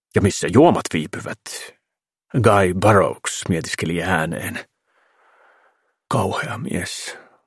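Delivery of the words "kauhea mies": disgusted mutter under the breath, open distaste. A countess who cannot hide her disgust for the film star, muttering with disgust. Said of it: "mumisi kreivitär Voranskaja".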